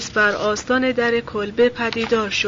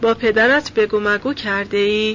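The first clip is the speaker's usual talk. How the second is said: ordinary delivery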